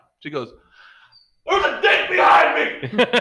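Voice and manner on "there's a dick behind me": light, high-pitched cry. Retelling a woman on camera just before her boss joins the call: retelling her yell. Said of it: "And she's yelling".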